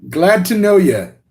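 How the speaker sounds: half-attempted English accent. Greeting someone, half slipping into a slight put-on English accent. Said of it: "I tried saying that in like an accent".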